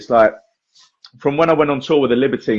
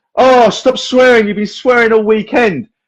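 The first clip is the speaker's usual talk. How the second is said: high, slow, loud shouting. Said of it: "He started shouting out".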